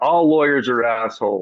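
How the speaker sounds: ordinary talk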